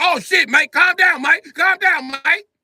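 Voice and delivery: very high, loud, drawn-out voice. Acting out Britain backing down after being punched: imitating Britain. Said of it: "Britain was like".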